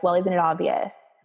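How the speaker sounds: ordinary talk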